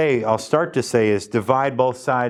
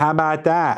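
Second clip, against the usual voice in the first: acted young girl voice; 4 semitones higher than usual. Solving a math problem, then doing a Cash Me Outside impression. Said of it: "my Cash Me Outside impression".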